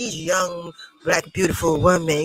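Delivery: low, creepy, skin-crawling weird voice. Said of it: "It sound creepy and fucking weird".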